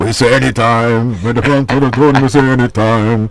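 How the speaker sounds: loud, high, raw dancehall warlord voice. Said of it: "That's my, my Bounty impression".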